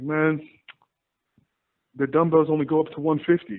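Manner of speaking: crushed, heartbroken little moan in saddest, mournful voice. Retelling a gym story, he quotes Keith, imitating Keith's saddest voice. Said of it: "in the saddest voice I've ever heard".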